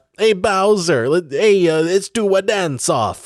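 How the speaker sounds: put-on slight New York accent. Joking that his dialogue is interchangeable between films, address Bowser in a slight New York accent. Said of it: "a slight New York accent".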